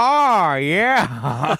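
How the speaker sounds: high, curt, short two-word reply. Reading out a friend's text reply in their voice: Tom Goss impression. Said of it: "his text is our impression".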